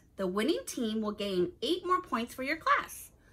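ordinary delivery

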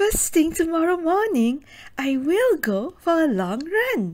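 eager, enthusiastic, excited, high and loud. Practicing a sentence about a long morning run: excited. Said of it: "Do I sound excited about my 20 kilometers run tomorrow morning? I sure hope so".

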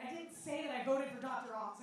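ordinary talk

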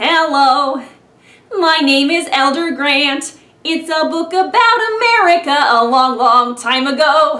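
slow, slightly nasal nerd voice. Showing how to draw out your inner nerd: slightly nasal nerdy voice. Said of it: "I just added a little hint of nasality to create that sort of stereotypical nerdy effect".

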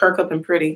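usual speaking voice

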